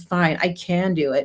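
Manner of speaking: slow, sarcastic, mock grudging tone. Retelling a student's reluctant words: imitating a sarcastic reply. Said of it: "he says it sarcastically".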